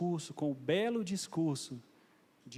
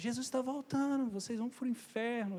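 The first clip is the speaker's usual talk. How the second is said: put-on man's shout, pitched higher; 9 semitones higher than usual. Retelling a man at the terminal who shouted at passersby: imitating a man shouting. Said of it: "ele gritava".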